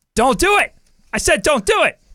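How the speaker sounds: stern, high-pitched, loud barked delivery.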